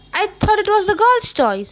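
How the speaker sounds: surprised and blunt. Just asked to the spring dance, the narrator replies startled and blunt. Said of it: "too startled to be diplomatic".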